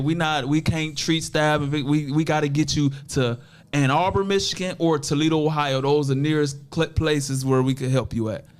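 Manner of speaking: ordinary talk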